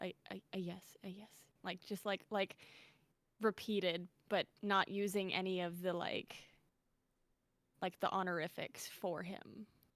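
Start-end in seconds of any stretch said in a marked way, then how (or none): 0.0-1.3 mock, barely audible mumble, slower. Recounting answering the commander in chief, speaker acts out a barely audible mumble. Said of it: "I barely mumble it".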